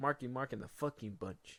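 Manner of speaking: ordinary talk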